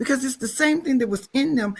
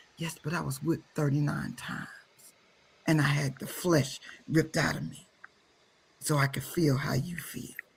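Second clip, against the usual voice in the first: soft, deep, low, hushed quiet murmur; 9 semitones lower, 7 dB quieter than usual. Retelling what a voice in their spirit said to them, quiet voice. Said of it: "a quiet voice in my spirit said".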